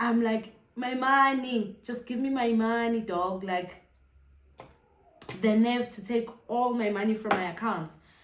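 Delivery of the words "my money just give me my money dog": put-on tearful, crying voice. Retelling calling friends while crying over taken money: retelling a tearful plea. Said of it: "I am crying tears, guys".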